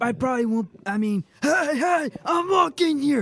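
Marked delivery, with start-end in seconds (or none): 1.4-3.2 mock yelling, high pitch, drawn-out. Repeating the film line, yelling at a cab driver as Dustin Hoffman. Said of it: "He's yelling at that cab driver".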